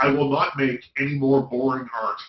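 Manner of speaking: ordinary talk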